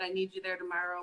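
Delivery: ordinary talk, nothing marked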